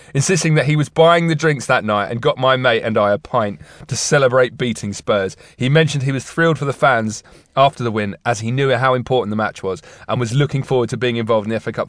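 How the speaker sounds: plain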